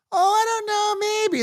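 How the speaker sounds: meek, timid little-schoolgirl voice, very high pitch. Mocking a player's interview answer; imitating a little schoolgirl. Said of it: "like a little schoolgirl".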